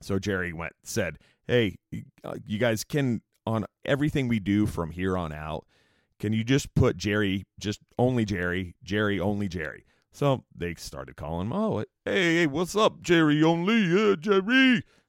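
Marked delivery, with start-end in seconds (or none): 11.5-14.8 fake Italian accent, much higher, slower. Retelling how people greeted a man named jerry, put-on italian voice. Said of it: "the Italian voice".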